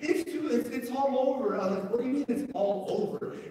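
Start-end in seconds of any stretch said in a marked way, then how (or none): 0.0-1.6 imitated crying voice, much slower. Speaker retelling a phone call about their house on fire, imitating the caller crying. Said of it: "And he's crying".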